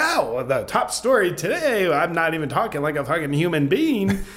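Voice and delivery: fake newscaster voice. Mocking how tv news presenters talk, doing a mocking news anchor voice. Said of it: "they're not even talking in normal tones of voice".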